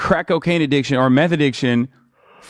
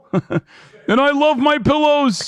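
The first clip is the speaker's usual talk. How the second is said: higher put-on Midwestern voice; 12 semitones higher than usual. Showing how to do a Midwestern-sounding impression: Mike Lindell impression with Midwestern voice. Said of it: "he sounds like Jesse Ventura a little bit".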